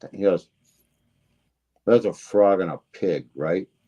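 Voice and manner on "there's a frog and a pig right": imitated flat deadpan delivery. Retelling a story about a deal, quoting Mort in total deadpan. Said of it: "in his like total deadpan".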